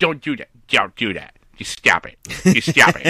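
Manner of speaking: mock cartoon father voice. Joking about the league and Deflategate: Peter Griffin voice. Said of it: "that's my Peter Griffin impression".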